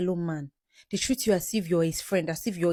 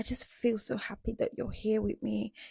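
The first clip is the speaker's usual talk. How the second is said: gentle, soft, sweet, tender, hushed voice; 4 semitones higher, 6 dB quieter than usual. Coaching a listener how to talk to him while leaning on him, in a soft voice. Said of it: "Use your soft voice".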